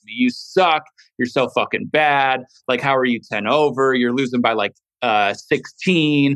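ordinary talk

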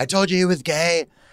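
mock shrill, very high screech. Speaker retells a girl at a party outing him, imitating her screaming.

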